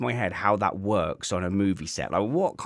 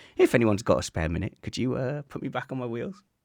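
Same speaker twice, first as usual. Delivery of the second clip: mock relaxed, easygoing, calm tone without panic; 3 semitones higher than usual. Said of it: "there was no panic or anything".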